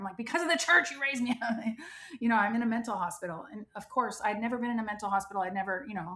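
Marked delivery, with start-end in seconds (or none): 0.2-1.8 mock crying, high-pitched tearful yelling. Retelling a phone call to the person who raised her, a tearful yell. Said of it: "I started yelling on the phone and I was crying".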